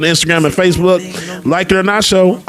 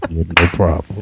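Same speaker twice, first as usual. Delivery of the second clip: deliberately deepened, very low, put-on deep voice; 14 semitones lower, 4 dB quieter than usual. Joking about a new microphone while talking: put-on deep voice. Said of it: "doing my deep voice like this".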